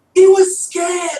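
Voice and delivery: put-on high, slow, loud yell in British accent. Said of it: "I again apologize to my Brit-".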